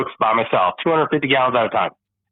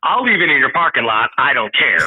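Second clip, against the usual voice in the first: put-on aggressive tone. Retelling what was said to a man at the site: retelling an aggressive line. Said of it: "I can be a little bit more aggressive".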